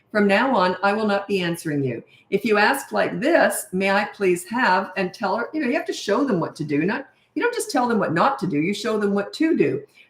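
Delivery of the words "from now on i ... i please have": usual speaking voice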